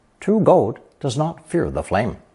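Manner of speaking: ordinary talk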